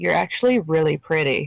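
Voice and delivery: barely-there, very quiet, hushed murmur. As a character turning aside to another character, very quiet. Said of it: "just very quietly goes".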